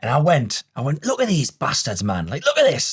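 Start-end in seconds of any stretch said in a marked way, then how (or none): 1.1-2.9 worked-up angry rant, swooping and rising. Retelling watching golfers chip close to the hole: imitating own angry outburst. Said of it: "angry at how good they were".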